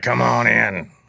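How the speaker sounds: put-on rasping, raspy old man's voice. Recalling his mentor welcoming him in to a poker game: imitating an old raspy voice. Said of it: "he had this old raspy voice".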